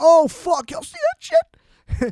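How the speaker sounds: very high, hyped-up exclamation. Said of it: "hype it the fuck up".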